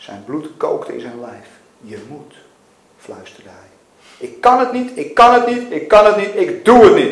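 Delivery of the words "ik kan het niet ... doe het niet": shrill, very loud scream, repeated over and over. Mac, told again that he must, refuses; screaming. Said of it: "gilde hij opnieuw".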